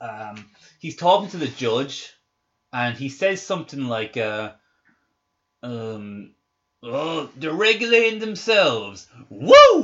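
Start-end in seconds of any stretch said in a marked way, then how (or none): 6.8-9.8 put-on loud, long, swooping drunken whoop. Imitating an actor talking to the judge: imitating drunk Bill Pullman. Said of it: "Like that".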